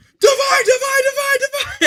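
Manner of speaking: very high, shrill, barked yelling. Retelling how he yelled at a man under a blanket, retelling a yell. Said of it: "I'm like yelling at him".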